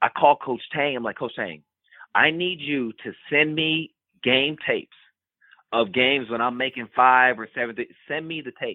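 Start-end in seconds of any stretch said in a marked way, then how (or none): none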